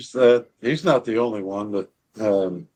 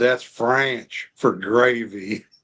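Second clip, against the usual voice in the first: slow, thick, overdrawn, exaggerated Southern drawl. Speaker retells Mark answering his question, in Mark's overdrawn Southern accent. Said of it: "in his big overdrawn Southern accent".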